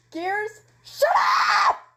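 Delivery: very high, very loud, shrill scream. In a role-play, the speaker's character snaps at another character, screaming at top of lungs. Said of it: "Violet screams, almost at the top of her lungs".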